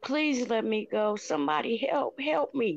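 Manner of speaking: put-on crying child voice, tearful and begging. Retelling how a young victim begged for help: imitating a child begging and crying. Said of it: "that baby was begging and crying".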